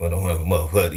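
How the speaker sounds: put-on mumbled Memphis accent. Mocking how people from Memphis talk: imitating slurred Memphis speech. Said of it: "They be like".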